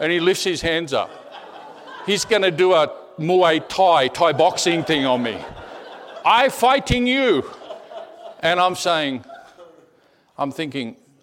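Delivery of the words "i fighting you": very high, pidgin-style broken English. Retelling what he said during a fight in a Bangkok Starbucks: imitating broken English. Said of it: "in broken English".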